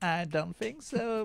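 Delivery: put-on high, slow, drawn-out sassy diva voice.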